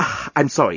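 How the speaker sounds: ordinary delivery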